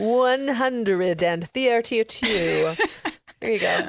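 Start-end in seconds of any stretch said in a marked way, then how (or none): 0.0-2.7 big booming delivery. Podcast host announces the number in a booming voice. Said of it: "I had to say it with that really booming voice".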